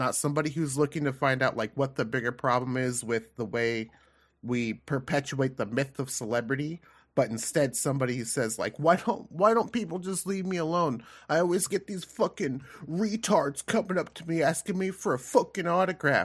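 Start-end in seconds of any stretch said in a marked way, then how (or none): 8.8-16.2 high-pitched, rising, fed-up voice. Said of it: "that's the voice I hear in my head from [name]".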